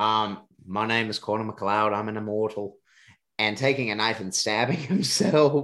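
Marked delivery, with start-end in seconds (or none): 0.0-2.8 badly faked, terrible Scottish brogue. Reviewing a movie, repeat a character's line in a terrible Connor MacLeod Scottish accent. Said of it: "I know that's a terrible Scottish accent".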